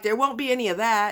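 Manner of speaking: ordinary talk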